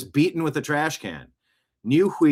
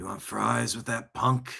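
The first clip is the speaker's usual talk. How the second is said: tough cop voice, movie style; 4 semitones lower, 7 dB quieter than usual. Host reading a line on his show, in a Dirty Harry voice. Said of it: "You got to read it like Dirty Harry".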